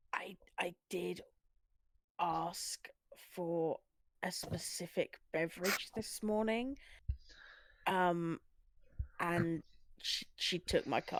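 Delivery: very slow, hushed whisper. Whispering back to Dorcas in character at the table: whispering in character. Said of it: "I'm gonna whisper back to Dorcas and go".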